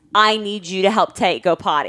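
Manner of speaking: brusque, curt, unfriendly tone. Retelling what she heard on the phone: imitating a not nice tone. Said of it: "I heard it in a not nice tone".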